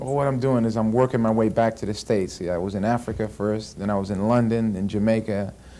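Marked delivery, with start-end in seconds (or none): none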